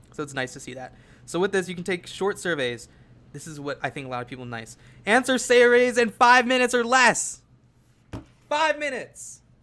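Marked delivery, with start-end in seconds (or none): 5.1-9.4 very high, excited shout. Presenting a survey site's five-minute surveys, shouting with excitement. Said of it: "Sorry for shouting".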